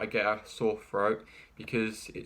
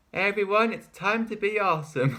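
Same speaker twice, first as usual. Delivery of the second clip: very high-pitched, bright and loud cartoon voice; 10 semitones higher, 5 dB louder than usual. Showing how they voice a cartoon pony: Rainbow Dash voice. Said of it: "that's how I do Rainbow Dash".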